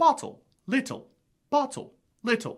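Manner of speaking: upper-class English RP accent, every T pronounced. Teaching pronunciation to American friends, saying the words in an RP accent, pronounced T. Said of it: "the pronounced T is something you would hear in R P".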